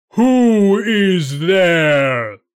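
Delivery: very loud, booming roar like thunder. Narrator voices the giant answering a knock at the castle gates, thunderous roar. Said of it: "I am a giant with 3 heads and can fight 500 men and make them fly before me. ... with a voice like thunder".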